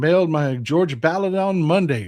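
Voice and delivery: ordinary talk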